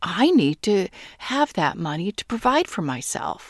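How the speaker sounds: pushy, insistent, demanding tone. Acting out someone who demands money when manifesting, mock-demanding tone. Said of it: "they demand it, ... You can even hear it in the tone of my voice".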